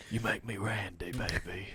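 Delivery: put-on British whisper. Two hosts joking about whispering in an English accent: an Austin Powers whisper. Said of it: "Austin Powers whisper".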